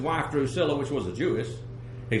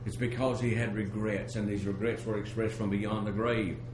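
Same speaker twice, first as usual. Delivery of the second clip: plain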